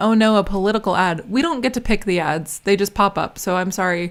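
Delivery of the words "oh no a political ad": ordinary talk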